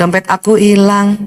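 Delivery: mournful, melancholic, sad, glum delivery. Acting out a melancholic person whose wallet is lost: mock-sad tone. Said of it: "Orang melankolis pasti sedih".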